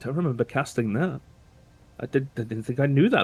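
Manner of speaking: mumbling under breath. Narrating a character, the speaker has them mutter to themselves. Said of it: "just kind of mutters to themselves like".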